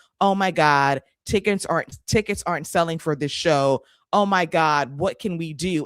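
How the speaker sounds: plain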